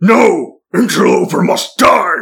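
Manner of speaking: slow, drawn-out, angry orc voice. Voicing an orc who refuses to be charmed: orc shouting in character. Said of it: "you attempt to charm one of the orcs, and he goes".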